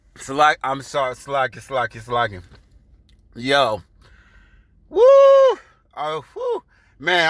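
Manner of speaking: speech breaking up in hard, swooping laughter. Reacting to a joke about divine vengeance, laughing hard while talking. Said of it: "I'm laughing so hard I'm fucking sweating".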